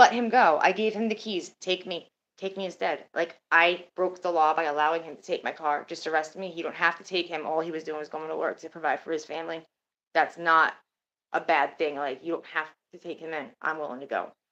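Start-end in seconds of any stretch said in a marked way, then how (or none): none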